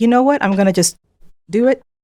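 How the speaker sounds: usual speaking voice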